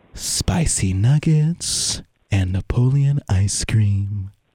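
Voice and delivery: eerie, very slow, drawn-out, creepy put-on voice. Saying something really weird on purpose, in a creepy put-on voice. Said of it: "I'm going to say something really weird in a creepy voice".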